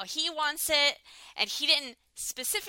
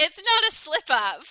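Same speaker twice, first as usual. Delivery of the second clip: loud, high incredulous outraged outburst. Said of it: "whew, calm down".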